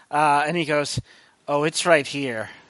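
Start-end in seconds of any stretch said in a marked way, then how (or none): 1.4-2.4 voice of a feral devil. Voicing Lucifer revealing the spider to a player: Lucifer with a feral smile. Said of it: "he gives you, like, a feral smile".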